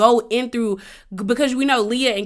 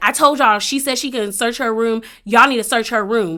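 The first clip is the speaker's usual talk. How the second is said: ordinary talk, nothing marked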